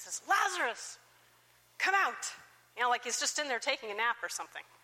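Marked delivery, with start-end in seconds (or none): 0.3-2.2 loud, high-pitched calling out. Retelling the moment a dead man is called to come out, retelling a loud call. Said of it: "he calls out in this loud voice".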